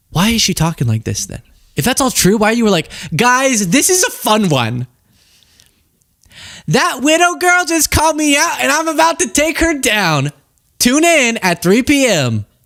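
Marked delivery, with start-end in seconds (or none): 3.1-12.4 bubbly, giddy excitement, high and drawn-out. Imitating a commentator announcing a stream: imitating someone giddy. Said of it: "Why are you so giddy?".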